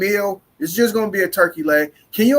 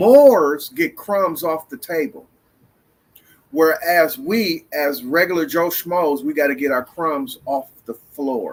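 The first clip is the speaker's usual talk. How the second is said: drawn-out, measured, slow, deliberate emphasis; 4 semitones lower than usual. Repeating a point a second time on purpose: slow and deliberate. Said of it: "I'm going to say it slow".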